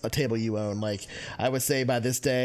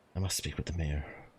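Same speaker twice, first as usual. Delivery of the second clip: muttering under breath, much lower and quieter; 6 semitones lower, 6 dB quieter than usual. Game master voices a woman glancing over, muttering under her breath. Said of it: "hear her muttering under her breath".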